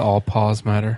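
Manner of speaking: normal talking voice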